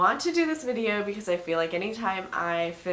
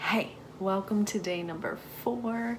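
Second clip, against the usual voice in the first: hushed whisper; 4 dB quieter than usual. Greeting viewers on day four while someone naps, whispering. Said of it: "I am whispering because Soren is taking".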